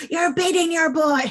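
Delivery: heated shouting. Retelling a film scene, Anthony Hopkins shouts at her, retelling Anthony Hopkins shouting. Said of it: "shouting at her in Italian".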